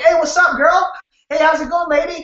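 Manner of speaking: overly casual slangy tone. Showing a wrong door opener for a senior: casual slangy greeting. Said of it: "you're not gonna be like".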